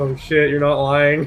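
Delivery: imitated sad-sounding voice. Imitating another speaker's agreement, imitating someone sounding sad. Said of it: "You sounded so sad".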